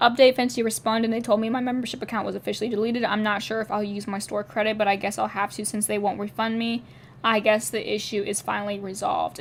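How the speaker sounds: plain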